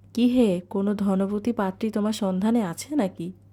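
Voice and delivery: plain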